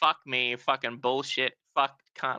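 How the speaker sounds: put-on angry, swearing, ranting voice. Retelling own reaction at the start of the stream: imitating own angry swearing. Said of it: "I'm pissed off".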